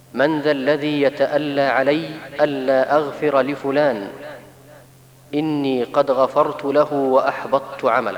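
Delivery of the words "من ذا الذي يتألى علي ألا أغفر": plain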